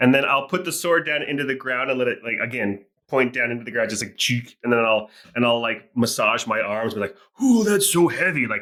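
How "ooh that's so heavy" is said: overdone, pantomimed, hammed-up groan, pitched up. Playing a character massaging arms after setting down a heavy sword: overdone, hammed-up complaining. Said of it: "overdoing it, pantomiming".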